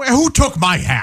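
high, cranky, put-on grumpy grouch voice. Asked if they have a grouch voice, the speaker shows it: grouch voice. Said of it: "It's a lot of that".

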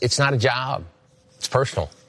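emotional, choked-up voice catching on the words. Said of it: "You're getting choked up talking about this place".

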